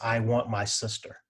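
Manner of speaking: put-on child voice, weeping the words out slowly. Retelling a grandson asked what's wrong: imitating a weeping child. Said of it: "starts weeping uncontrollably".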